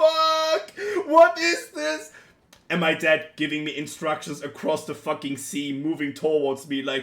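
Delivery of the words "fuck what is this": very high scream with fuck stretched out. Retelling hooking a huge fish and calling to dad: retelling own scream. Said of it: "I was screaming".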